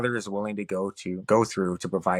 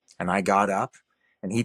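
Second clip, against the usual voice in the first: ordinary talk, nothing marked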